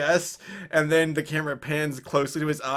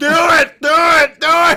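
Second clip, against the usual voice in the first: very loud, high, slow, huge, drawn-out bellow; 13 semitones higher, 12 dB louder than usual. Joking about an old Indiana Jones, imitating Shia LaBeouf. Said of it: "Shia LaBeouf's just like".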